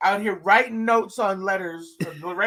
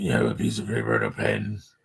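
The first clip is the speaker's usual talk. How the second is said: very low, garbled, creaky mumble, hard to follow. Showing a listener how a man spoke: imitating unclear speech. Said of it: "you can't really understand him".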